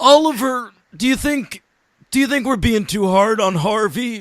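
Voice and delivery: dumb voice, pitched high. Acting out an actor asking the director about his voice: dumb Joseph Gordon-Levitt voice. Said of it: "J G L, just do it like that".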